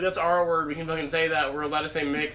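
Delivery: ordinary talk, nothing marked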